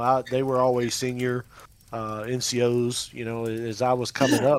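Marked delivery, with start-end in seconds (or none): none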